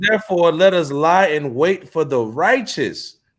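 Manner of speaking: normal talking voice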